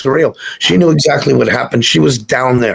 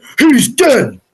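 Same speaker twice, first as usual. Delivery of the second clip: very high, mock triumphant voice; 12 semitones higher than usual. Retelling what a man in the car said when he turned around, mimicking a mission-accomplished tone. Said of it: "in a very mission accomplished type of voice".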